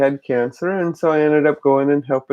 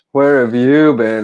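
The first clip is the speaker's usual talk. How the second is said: voice dropped right down low, really deep; 2 semitones lower, 4 dB louder than usual. Retelling what a man at a dance said to her: imitating a really deep voice.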